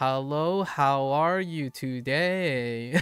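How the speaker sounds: put-on Chinese accent rising and falling like a siren. Recalling someone's accent bit, the speaker does a siren-like chinese accent. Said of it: "the Chinese accent was you just like sound like a siren".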